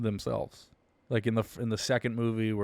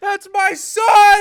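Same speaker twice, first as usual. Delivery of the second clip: anguished cry, higher and louder; 14 dB louder than usual. Doing the impression of a grieving father's cry: imitating Cedric's dad crying out. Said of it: "I have to do that impression".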